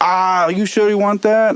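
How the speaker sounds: poor Swedish accent impression. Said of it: "I'm horrible at this accent".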